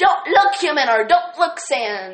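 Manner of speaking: loud, high, belted, goofy nyeh-heh-heh voice. Speaker describing a comic, quoting Papyrus in his nyeh-heh-heh voice. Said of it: "Papyrus in his nyeh-heh-heh voice".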